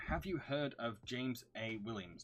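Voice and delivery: normal talking voice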